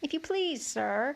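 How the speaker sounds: meek, bashful, timid tone. Desperate for help, Alice addresses the rabbit in a low, timid voice. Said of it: "she began in a low, timid voice".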